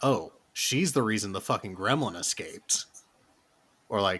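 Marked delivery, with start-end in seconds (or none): none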